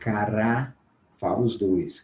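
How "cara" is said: slow-motion cara, stretched out syllable by syllable. Sounding out a word in slow motion: slow-motion "cara". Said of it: "se nós falarmos a palavra em câmara lenta".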